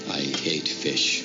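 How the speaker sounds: very low, menacing put-on villain voice. Retelling a scene where a shopper puts on his best evil voice: imitating a put-on evil voice. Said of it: "putting on his best evil fa-, evil voice".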